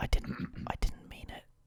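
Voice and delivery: soft, barely voiced, whispered pleading. Apologizing in character after a rude outburst: whispering. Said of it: "Why is he whispering?".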